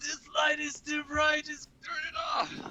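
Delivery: acted, piercing, very high-pitched, shrill scream. Recalling a cyclist who rode at them on a bike path, imitating a screaming cyclist. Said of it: "he was screaming".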